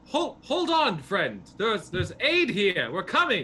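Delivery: loud, high yelling, calling out. A player's character calls into a cave after someone dragged inside, yelling. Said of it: "I just start yell out into the cave".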